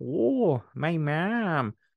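put-on Minnesota accent. Joking with a co-host, talking like a Minnesota mom. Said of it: "I just like talking like a, like a Minnesota mom".

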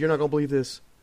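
mock out-of-breath speech. Retelling a phone call from someone out of breath: imitating someone out of breath. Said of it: "he calls me and he's out of breath".

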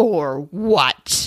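mock cold, mean, nasty tone. Retelling an argument, speaker quotes Erica's reply to Sutton, imitating a cold, mean reply. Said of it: "in such a cold, horrible, mean way".

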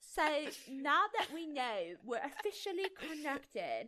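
unconvincing, failed attempt at a British accent. Reading a fanfic aloud, the speaker voices a character's line in an attempted British accent. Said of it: "I got to do a British accent".

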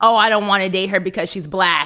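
plain

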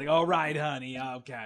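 put-on raspy, smoker-like voice. Recalling a woman who was always smoking, imitating a raspy smoker's voice. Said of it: "she always had that really raspy voice".

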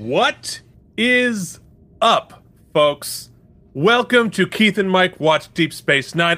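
weighty, grand, momentous delivery. Podcast host opening the show, in a momentous voice. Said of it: "I speak in this momentous voice".

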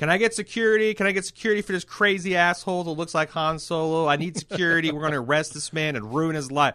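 loud shrill insistent voice. Retelling what a woman said while walking away, imitating a loud demand. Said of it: "she loudly says".

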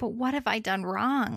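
acted tearful pleading, mock crying. Speaker retelling a story, voicing the girl who is crying, imitating someone crying. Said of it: "And she's crying and she's like".

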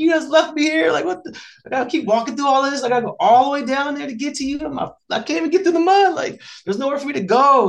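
very high, fed-up, frustrated shrieking scream. Retelling being stuck in deep mud, retelling his own screaming. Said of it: "I was literally out there screaming".

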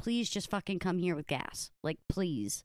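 mock begging, pleading tone. Retelling how Brandon begged Kyle to hurry to him; imitating someone begging. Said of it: "he was like begging Kyle to hurry to get to him".

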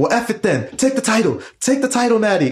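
ballistic, high, swooping screaming. Retelling a fan in the crowd cheering for Natty: imitating a fan screaming. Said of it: "screaming at the top of his lungs".

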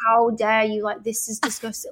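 put-on, properly mad, indignant, upset outburst. Retelling own reaction to being told not to cook: imitating own angry outburst. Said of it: "I was so mad".

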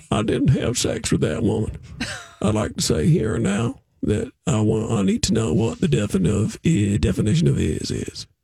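gravelly, creaky voice. Trying an impression after being asked to show more voices: Bill Clinton impression. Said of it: "I can try my Clinton".

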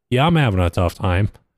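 normal talking voice

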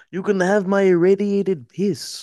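put-on Soviet-style accent. Playing Civ, talking about the end game: Soviet voice. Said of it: "I did like a Soviet voice there".

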